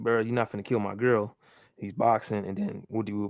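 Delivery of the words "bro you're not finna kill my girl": ordinary delivery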